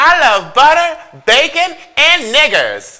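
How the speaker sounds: shrill, very loud, high put-on voice. Doing an impersonation for listeners to guess: Paula Deen impression. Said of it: "So this is my impersonation".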